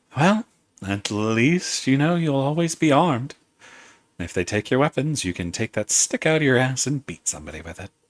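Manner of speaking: slight, small, soft feminine voice. A voice speaks from right outside the second-floor window, small feminine voice. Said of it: "you hear a small feminine voice".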